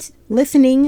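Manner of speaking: voice breaking mid-word on "listening". The host signs off the show, thanking listeners; voice cracking. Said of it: "my voice cracked".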